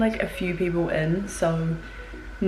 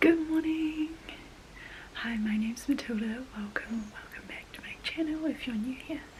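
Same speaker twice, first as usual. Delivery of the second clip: whispering, much quieter; 5 semitones higher, 9 dB quieter than usual. Greeting channel viewers early in the morning while others sleep; whispering. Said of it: "I am whispering because it's early".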